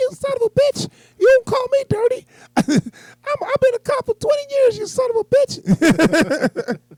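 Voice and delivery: very high, squeaky, swooping cartoon squeak. Retelling a movie scene, quoting a cop who opposed Batman: Mickey Mouse voice. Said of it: "He talked just like Mickey Mouse".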